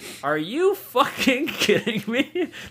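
high, laughing, incredulous outrage.

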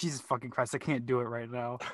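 ordinary delivery

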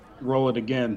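ordinary talk

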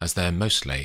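ordinary delivery

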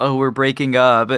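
ordinary talk

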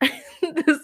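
high laugh breaking through the word. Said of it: "And I'm laughing because".

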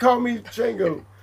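mock angry, indignant, insistent tone. Retelling a scene where a character gets mad: imitating an angry demand. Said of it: "he gets mad about it".

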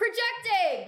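very high, shrill, screamed-out word. Answering a reminder that the mic is farther away: shouting. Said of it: "don't scream".

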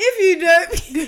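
high, loud, slow laughing mock rant.

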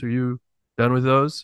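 soft, quiet, courteous, even-toned and calm. Retelling a strong guy politely asking another for his dumbbells, retelling a calm, quiet ask. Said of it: "in a nice, calm, quiet voice".

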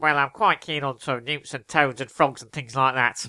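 put-on nasal voice with nose held. Doing an impression from a news interview: nasal Ken Livingstone impression. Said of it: "this is my Ken Livingstone impression".

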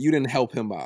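plain

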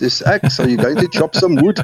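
put-on high-pitched, slight South African accent. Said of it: "in my little South African accent".

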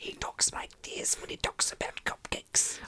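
soft, breathy, hushed whisper. Speaker describes how a loved comedian talks about cupcakes; Jim Gaffigan whisper. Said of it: "And he whispers".

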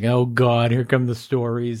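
put-on exasperated, eye-rolling sigh. Retelling a son's reaction to his father's old stories: imitating an eye-rolling exasperated son. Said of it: "he kinda rolled his eyes like".

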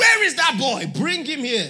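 loud, high preacher-style shout. Retelling preaching on stage and calling for a boy: retelling a shout. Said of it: "I just shouted".

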